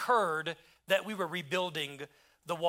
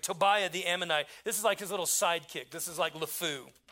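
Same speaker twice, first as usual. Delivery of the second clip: normal talking voice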